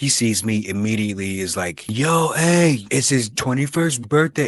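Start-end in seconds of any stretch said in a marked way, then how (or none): 1.9-4.5 pitched-up radio DJ announcing voice. Retelling how he greeted the speaker in front of a crowd, radio dj voice. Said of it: "his radio D J voice".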